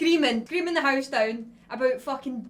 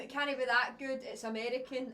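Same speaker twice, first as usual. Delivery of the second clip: plain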